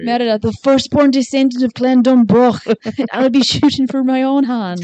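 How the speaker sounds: loud, declaimed, bad Scottish accent. Chatting about Disney's Brave, a speaker quotes Merida in a bad Merida Scottish accent. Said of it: "That was a terrible Scottish".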